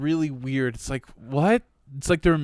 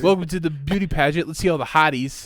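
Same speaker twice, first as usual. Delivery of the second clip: ordinary talk, nothing marked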